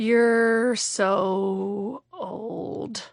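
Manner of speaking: put-on drunken, yammering half-whisper, drawn-out "so". Retelling jokes someone half-whispered in your ear: imitating a boozy half-whisper. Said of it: "start whispering, like, boozy, stupid, yammering".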